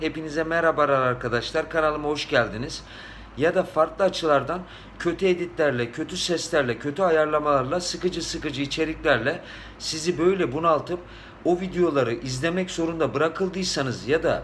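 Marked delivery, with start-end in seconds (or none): none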